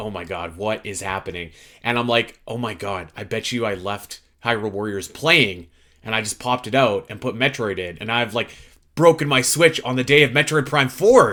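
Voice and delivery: ordinary talk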